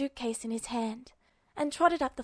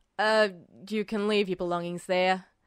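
deep, hoarse man's voice; 5 semitones lower, 3 dB louder than usual. Narrator reading the man's spoken line, deep, hoarse voice. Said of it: "I'm Officer [name]. ... The man's voice was deep and hoarse with sleep or something else".

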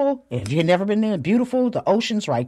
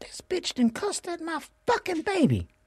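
mock livid, very high-pitched, hushed fury; 12 semitones higher, 6 dB quieter than usual. Parent recounts reacting after their child was cursed at: retelling being livid. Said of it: "I'm livid".

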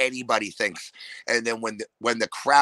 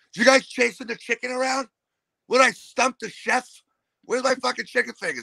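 put-on very high, loud, rowdy, obnoxious drunk yelling; 12 semitones higher than usual. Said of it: "the loud, obnoxious asshole at the bar".

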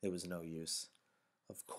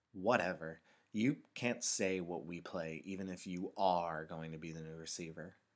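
ordinary delivery

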